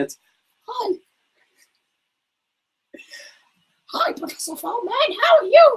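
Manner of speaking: very high-pitched puppet voice. The speaker tries a character's voice to greet a professor; Sweatshirt Sheep voice. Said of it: "you want me to try Sweatshirt Sheep?".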